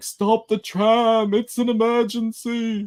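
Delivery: very high, very slow, drawn-out flamboyant camp yell. Retelling a person running after a tram: imitating a yell in a camp voice.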